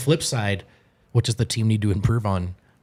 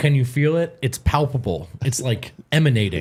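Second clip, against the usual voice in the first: ordinary talk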